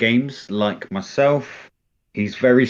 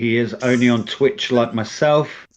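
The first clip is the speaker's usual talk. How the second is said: plain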